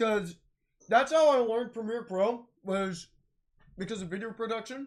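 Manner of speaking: chewing food while speaking. Reminiscing about a school class, talking while eating. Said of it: "I'm eating chicken right now".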